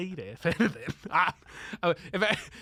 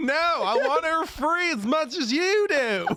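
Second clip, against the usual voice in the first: very high, camp Southern American lady voice; 10 semitones higher, 4 dB louder than usual. Retelling an audition reading asked for an American accent, camp Southern American lady. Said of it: "camp American lady from the South".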